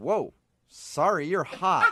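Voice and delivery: very slow, stunned, frozen, dazed blurt. Retelling how the angry driver suddenly changed: imitating a stunned man. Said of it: "like a deer in headlights".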